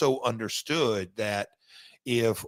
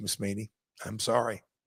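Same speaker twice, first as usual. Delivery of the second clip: ordinary delivery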